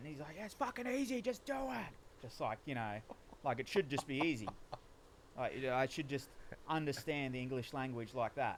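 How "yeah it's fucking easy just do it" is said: put-on very high, angry, blown-up shout. Recalling someone blowing up at them over reading, retelling someone yelling. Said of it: "he's just yelling".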